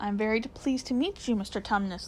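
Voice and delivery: ordinary delivery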